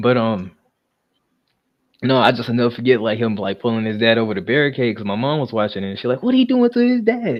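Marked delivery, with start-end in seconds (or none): 6.2-7.4 very high-pitched, heated, agitated delivery. Retelling a mom's reaction to wrestling on tv: imitating mom getting heated. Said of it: "So she all heated and stuff".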